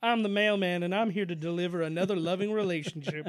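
loud, projected, declarative, proclaiming announcer-like delivery. In a comic bit where Karl Malone is asked to marry a couple, do a Karl Malone impression. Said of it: "I love your Carl Malone impression".

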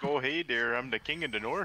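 put-on Midwestern accent. Riffing on a Midwest fantasy setting: Midwestern accent. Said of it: "use an accent that exists in the real world, but it's the Midwest".

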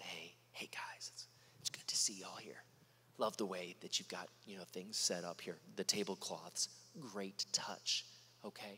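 very quiet, soft-spoken, hushed delivery. Retelling a mock version of a scene at the temple: imitating a very soft voice. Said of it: "very, very softly".

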